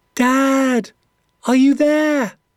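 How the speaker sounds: tiny, very high calling voice, drawn-out Dad. Reading a first-person story, the narrator calls for dad in a dark forest; small, high calling voice. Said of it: "My small, high voice echoed".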